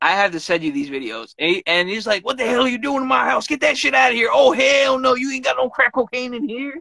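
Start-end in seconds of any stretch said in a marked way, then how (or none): 2.2-6.8 put-on pitched-up thick South Carolina country accent. Speaker acts out a man in funny videos, in a country accent. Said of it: "he has the country accent".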